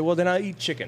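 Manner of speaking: ordinary talk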